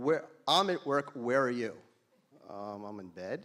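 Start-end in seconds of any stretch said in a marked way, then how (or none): 0.0-1.7 big, loud, booming voice. Retelling a 6:30 a.m. speakerphone call, imitating Dennis Block's booming voice. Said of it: "I hear this booming voice".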